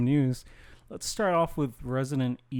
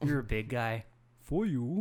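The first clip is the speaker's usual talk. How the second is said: dumb put-on masked villain voice; 4 dB quieter than usual. Doing a dumb Bane voice after talking about the films: dumb Bane voice. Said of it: "I do like doing the dumb Bane voice".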